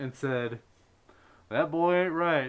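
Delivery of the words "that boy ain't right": very loud, belted, pitched-up delivery. Retelling how a boss reacted to an odd remark: Hank Hill voice. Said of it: "put on a very good Hank Hill voice".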